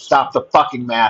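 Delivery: ordinary talk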